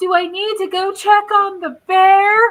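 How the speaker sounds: mock hysterical, freaked-out, high and loud. Retelling what a woman said after she hit a bear: imitating a hysterical woman. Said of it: "the most hysterical woman ever".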